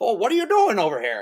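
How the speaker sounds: put-on old-time movie star voice with a drawl. Show how Dean Jones talked in the movie, doing a Jimmy Stewart impression. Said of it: "he kind of sounded like Jimmy Stewart".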